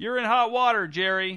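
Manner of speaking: loud, high-pitched yell. From the back of the theater, a mother calls to her son onstage, yelling. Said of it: "yelled Jerry's mom from the back of the theater".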